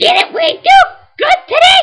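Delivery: very high, cute critter voice rising into a squeak. Wrapping up a game video for viewers, in a Chikorita voice. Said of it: "Terrible impression of Chikorita".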